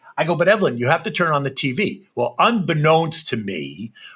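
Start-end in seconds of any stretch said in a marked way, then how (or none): none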